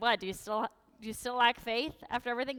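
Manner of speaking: heavily sarcastic tone. Retelling Jesus's words to the disciples: imitating a sarcastic tone. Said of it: "obviously he's sarcastic when he's like".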